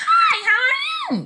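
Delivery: voice pushed very high, very slow. Explaining voice pitch, the speaker demonstrates a high-pitched voice. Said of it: "which is how I'm speaking right now, instead of".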